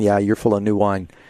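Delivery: ordinary delivery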